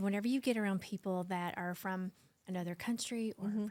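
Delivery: ordinary talk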